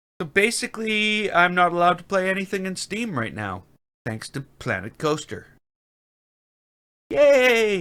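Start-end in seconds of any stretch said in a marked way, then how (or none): 4.1-7.8 sarcastic, sing-song cheer with yay drawn out long. Complaining that a game won't sync with the server: sarcastic. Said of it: "I can be sarcastic sometimes".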